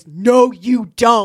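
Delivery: scary, very loud, booming bellow. Retelling a show's scene where the father turns on his son: scary Superman voice. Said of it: "Superman gets all scary".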